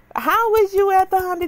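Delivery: full-on, high, loud squealing voice. Retelling a man's question, imitating a high-pitched squeal. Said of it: "you make you want to go into a squeal".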